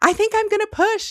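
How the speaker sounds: mock, urgent yell pitched very high. Recalling labor at one in the morning, a mother reenacts calling upstairs, retelling a scream. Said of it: "I screamed up and I said".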